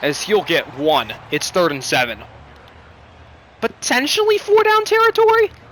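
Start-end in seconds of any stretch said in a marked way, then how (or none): 3.6-5.5 loud voice crack, squeaking very high. Commentating a football play, the speaker's voice cracks. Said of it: "a horrible voice crack there".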